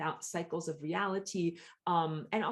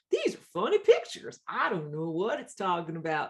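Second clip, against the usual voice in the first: goofy, loud, swooping, silly put-on voice; 6 dB louder than usual. Acting out people puzzled by ancient hieroglyphs, in a silly voice. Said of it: "like making a silly voice here".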